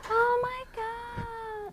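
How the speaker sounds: very high, loud squeal with "God" stretched out. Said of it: "That's how she talks".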